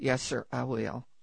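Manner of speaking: whispered. Telling a story, a little boy answers the doctor, retelling a whisper. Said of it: "he whispered to the doctor".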